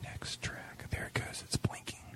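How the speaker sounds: hushed whisper. Over a playing radio recording, the speaker comments on the track: whispering. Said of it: "Why are you whispering?".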